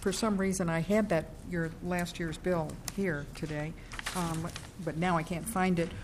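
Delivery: too quiet to hear, soft voice.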